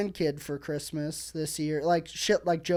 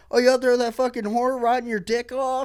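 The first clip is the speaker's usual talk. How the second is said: furious, lashing-out voice, loud and pitched up; 6 semitones higher, 7 dB louder than usual. Retelling what the older brother said, imitating an angry brother. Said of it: "he was pissed all the time".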